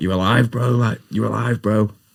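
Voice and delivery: high, frantic shout. Retelling waking in an ambulance after a car crash: imitating Boo screaming. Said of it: "Boo screaming at me".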